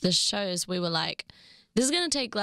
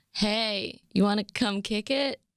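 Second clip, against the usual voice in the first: clumsy, bad put-on American accent. Asked to say a pickup line in their best American accent. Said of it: "in your best American accent".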